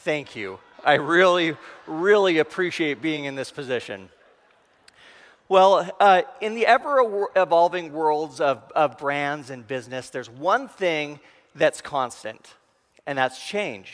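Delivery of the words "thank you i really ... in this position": sarcastic, falsely grateful tongue-in-cheek tone. A speaker thanks whoever placed them between two other speakers, sarcastic thank-you. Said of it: "for the sarcastic one".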